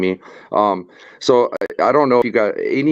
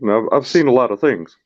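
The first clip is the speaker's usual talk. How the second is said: lecturing tone, world-weary and jaded; 3 semitones higher than usual. Imitating Dr. Phil talking down to people: Dr. Phil impression. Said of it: "Doctor Phil will talk that shit".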